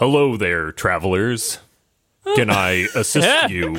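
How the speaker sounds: animated announcer voice with swooping pitch. Voicing a barkeep character answering the travelers' greeting, in an announcer-like voice. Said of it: "He sounds more announcery".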